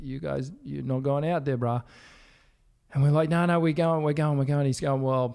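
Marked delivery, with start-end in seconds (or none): 0.0-1.8 put-on Hawaiian-accented voice. Retelling a lifeguard's warning as they were about to paddle out, put-on Hawaiian voice. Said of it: "put on the Hawaiian voice".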